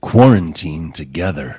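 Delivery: very deep, booming stage-hypnotist intoning. Reading an app name aloud from the screen: hypnotist voice. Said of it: "I wanna read it in my hypnotist voice".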